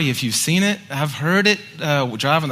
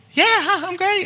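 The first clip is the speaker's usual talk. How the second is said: very high, squeaky put-on falsetto. Speaker retells a man on the couch answering the speaker's check-in, imitating his high-pitched voice. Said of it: "in this high-pitched voice".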